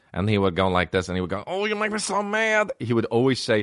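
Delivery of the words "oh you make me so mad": very high, slow, tiny, funny, frustrated little voice. Remembering a younger cousin, the speaker imitates the cousin's funny little voice. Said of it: "he had a funny little voice".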